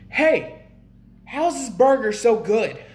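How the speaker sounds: high, loud yell. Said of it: "I yelled".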